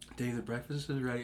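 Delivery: very quiet, gentle, soft, soothing motherly voice. Speaker recalls his mom calling him to breakfast, imitating mom's soothing voice. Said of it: "Mom has a very soothing voice. She would be like".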